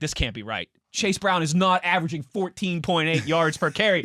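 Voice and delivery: ordinary talk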